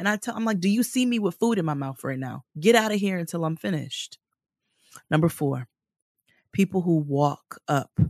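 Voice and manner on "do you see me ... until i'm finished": fed-up, disgusted, dismissive tone. Retelling what was said to someone interrupting lunch: imitating own disgusted retort. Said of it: "with disgust".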